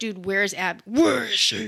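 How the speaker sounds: put-on angry voice. Retelling a game scene where Tommy shows up: imitating Ellie really pissed. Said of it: "really pissed, and she's like".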